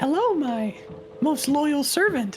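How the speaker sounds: put-on high girly voice, pitched way up. A role-play character addresses a servant, girly voice. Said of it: "Pigeon will put on his best girly voice".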